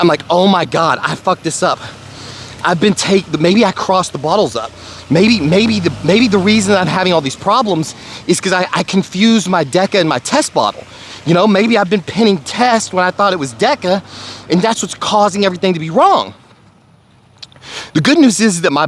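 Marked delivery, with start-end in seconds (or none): none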